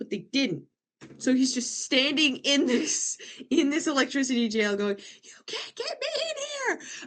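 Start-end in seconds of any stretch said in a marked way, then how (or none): 5.2-6.9 very high, shrieking, wailing villain cry. Retelling a cartoon scene, imitating Starscream screaming for no reason. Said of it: "Screaming for no reason".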